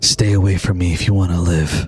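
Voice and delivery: whispering. A man grabs someone by the arm, pulls them close, and speaks whispering. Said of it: "as he whispers in your ear".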